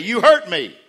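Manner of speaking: put-on loud, teary, hurt child's voice, welling up. Retelling a daughter who got hurt, imitating a child welling up. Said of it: "start to well up and say".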